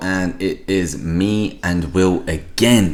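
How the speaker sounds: stress drawn out on again, slow and loud.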